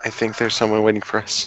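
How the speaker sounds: hushed, whispered voice. Voicing Sora warning the others: whispering back. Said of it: "Sora kinda turns to them and whispers back".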